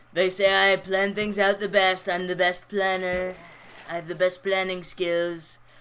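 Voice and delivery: impression that sounds like a little kid. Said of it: "Your Trump impression is so funny".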